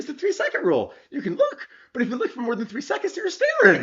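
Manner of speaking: put-on voice pitched way up high. Retell how he messed with you by explaining the rule, imitating his high-pitched voice. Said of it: "in that high pitched voice of his".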